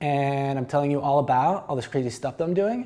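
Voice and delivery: each phrase ending with rising pitch. Teaching voice inflection, talking like a valley girl: every phrase ending rising like a question. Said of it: "like I'm a Valley girl, ... sounds like I'm asking a series of questions".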